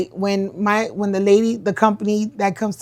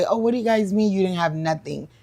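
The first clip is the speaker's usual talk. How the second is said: plain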